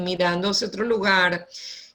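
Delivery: bored, indifferent teacher lecturing voice.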